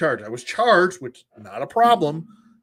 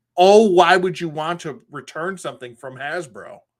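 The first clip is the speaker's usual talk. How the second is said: patronizing, condescending, talking-down customer-service voice; 3 semitones higher, 5 dB louder than usual. Retelling a customer service call: imitating a condescending tone. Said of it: "in the most condescending way".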